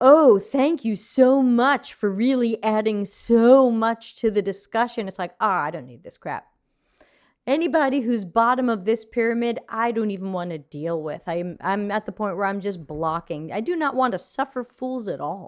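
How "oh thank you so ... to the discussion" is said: mock heavy, laid-on sarcasm, slow raised drawl. Recalling a guy they later blocked, imitating a sarcastic reply. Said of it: "he just got all sarcastic with me and he's like".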